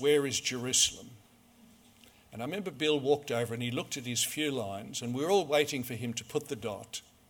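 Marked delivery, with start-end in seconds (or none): none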